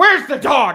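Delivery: acted, very loud, very high, shrill, freaked-out panic. Retelling how Mom reacted to the dog bite news: imitating someone freaking out. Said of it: "she freaked out immediately".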